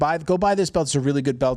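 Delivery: ordinary talk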